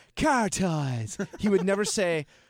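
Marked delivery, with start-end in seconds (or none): 0.2-1.2 commercial ad-spot announcer delivery. Retelling how the commercial announcer said the name: imitating the ad announcer's delivery. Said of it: "every time he would say".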